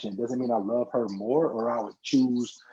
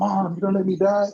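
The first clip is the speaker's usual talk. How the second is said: put-on weepy child's voice, high, loud, begging through tears; 8 semitones higher, 5 dB louder than usual. Retelling a movie scene where the kid sits there crying: imitating a crying kid. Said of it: "the kid was sitting there crying".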